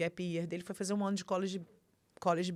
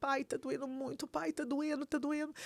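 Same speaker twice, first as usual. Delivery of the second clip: high, sobbing, crying voice, pained; 7 semitones higher, 5 dB quieter than usual. A father retells what his hurt son said to him: imitating his son crying. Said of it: "E ele chorando muito".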